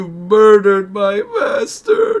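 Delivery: sobbing, very high and very loud crying wail. Demonstrating a reaction to learning Anakin was Vader, instead of monotone; crying. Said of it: "be like crying".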